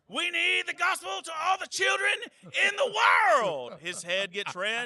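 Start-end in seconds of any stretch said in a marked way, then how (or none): 0.2-3.8 very high, shouted, fired-up sermon-style preaching. Speaker shows the other speaker how the pastor preaches: Pastor Vent impression. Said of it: "Pastor Vent is like this".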